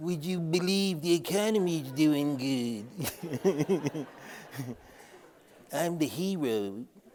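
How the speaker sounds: very slow, droopy cartoon dog drawl. Speaker mocks how Biden gets portrayed, doing a Droopy the dog voice. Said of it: "Sorry, I had to throw that impression".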